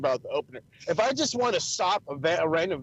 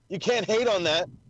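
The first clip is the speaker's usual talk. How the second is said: usual speaking voice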